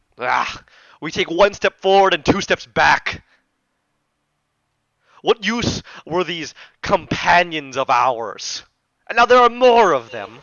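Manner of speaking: furious, loud, angry voice. The angry voice in the head answers Connie back: angry voice. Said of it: "This angry voice".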